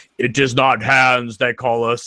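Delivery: authoritative military-style voice. Imitating Pinhead in movies one and two: commanding-general Pinhead voice. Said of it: "sounds like a commanding general".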